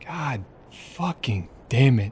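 muttered under the breath, understated. Playing a character sitting on the dock with a cigarette: muttered under breath. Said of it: "just quietly under my breath".

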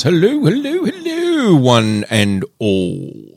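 high, swooping pitch, very slow and drawn out. Opening the show in a put-on voice: Lord of the Rings style voice. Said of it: "very Lord of the Rings-ish sort of an opening".

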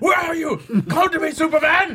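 high, loud wrestler-style ringside callout. Retelling a film scene where a villain grabs the microphone: Zod's wrestler-style challenge. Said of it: "Zod grabs the microphone like a wrestler at a challenge".

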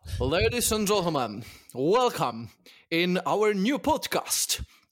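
fake, clumsy American accent. Asked by co-hosts to show an american accent first, in a bad american accent. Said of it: "American first".

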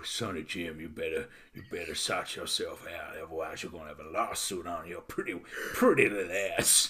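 soft, hushed cowboy voice. Imitating a phone caller threatening a lawsuit over a Spider-Man cameo, cowboy voice. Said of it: "Why does he sound like some sort of cowboy?".

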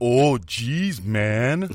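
teasing send-up, mock way of talking. Parent retelling how their son imitates them, imitating son's impression of parent. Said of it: "My son tries to do me, and he goes".

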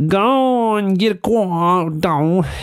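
put-on American accent, slow, unhurried, high. Recounting an argument, quoting the other man in his american accent. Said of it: "with his American accent".

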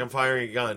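plain

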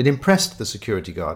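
ordinary delivery

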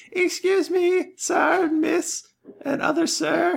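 put-on squeaky, raspy, very high, creaky little boy voice. Voicing a small peasant boy who runs up to the party: small peasant boy voice. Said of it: "a small peasant boy runs up to you and goes".

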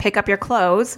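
very angry, stern, harsh tone. Showing the tone she uses with her kids, a stern, very angry mom tone. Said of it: "This is me with the tone".

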